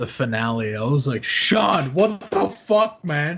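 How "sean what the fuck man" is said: put-on stunned yell of disbelief, high and drawn-out. Retelling going to Sean after watching the finale, acting out a scream. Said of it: "I was going to Sean screaming".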